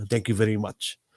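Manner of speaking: imitated, put-on Russian accent. Retelling what a huge guy said when offered help with the trash, Russian accent. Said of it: "in his accent".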